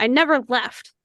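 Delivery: low grumbling, grumbled voice. A narrator voices someone on the floor below answering with a grumble: grumbling. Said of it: "you hear someone grumble and they go".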